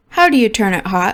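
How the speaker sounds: normal talking voice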